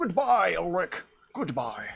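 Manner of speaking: swooping, drifting, wandering wizard voice. Trying out a wizard character's voice for a farewell, drifting into Sean Connery voice. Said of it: "I'm turning into, uh, uh, freaking Sean Connery".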